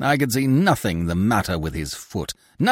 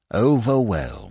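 wry, dry, mocking, sardonic single word. Narrator reads Polichinelle replying to praise with a bow, sardonic. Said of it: "ever sardonic".

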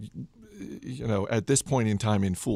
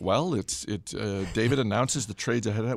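ordinary talk

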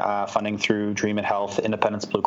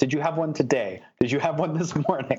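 high-pitched, exasperated, frustrated. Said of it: "he gets so frustrated".

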